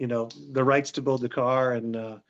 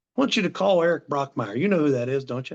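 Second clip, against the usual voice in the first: put-on male Southern drawl. Retelling what a man with hundreds of cars said to him, imitating George's southern drawl. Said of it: "He said in his southern drawl".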